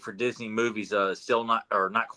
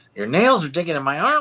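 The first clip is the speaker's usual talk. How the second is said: put-on high, loud little child's voice; 7 semitones higher, 7 dB louder than usual. Quoting a favorite line, in an imitated child's voice. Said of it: "I was doing an impression of of a kid".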